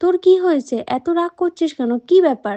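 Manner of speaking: plain reading voice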